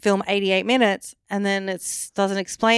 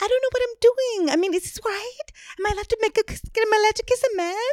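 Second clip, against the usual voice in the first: very high, timid, piping, too-high-pitched voice; 13 semitones higher than usual. Complaining that a woman's voice is too high pitched, imitating a too-high-pitched voice. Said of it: "her voice is like too high pitched".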